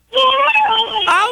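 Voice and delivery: sudden panicked outcry.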